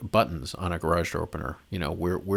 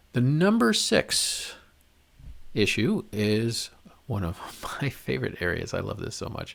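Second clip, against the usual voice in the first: dry, sarcastic, mock enthusiastic tone; 4 semitones higher than usual. Introducing the next issue on a countdown list: sarcastic. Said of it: "I'm being sarcastic there".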